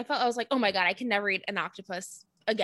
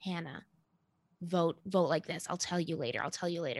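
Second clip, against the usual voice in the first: soft, secretive half-whisper; 4 semitones lower, 6 dB quieter than usual. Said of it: "Was all this whispering where Michelle was".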